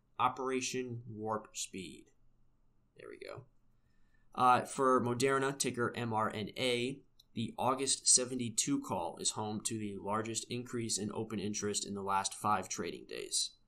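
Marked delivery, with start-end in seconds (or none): 0.2-2.1 menacing movie villain voice. Giving a market update, repeating the program name in a Dr. Evil voice. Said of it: "How's my Dr. Evil voice there?".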